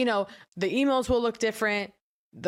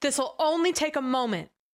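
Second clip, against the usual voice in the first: mock, high, very excited, eager tone; 5 semitones higher than usual. Retelling a phone call from an accountant: imitating an excited voice. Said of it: "very excited voice in her tone".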